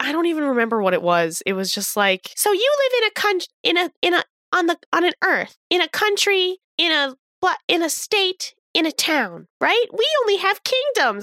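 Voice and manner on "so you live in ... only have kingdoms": high put-on voice, stumbling over phrases. Retelling a failed stand-up bit by a VTuber: impression of Ruby. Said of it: "That was a really good impression of Ruby".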